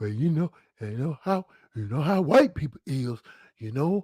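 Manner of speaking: very low, secretive, half-whispered aside. Retelling his grandmother's reply when asked why she half-whispers, imitating her half-whispering. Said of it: "why are you whispering?".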